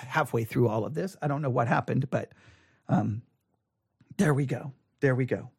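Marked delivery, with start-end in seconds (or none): 1.2-5.4 low, soft, fading, hoarse voice. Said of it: "apologize for losing my voice".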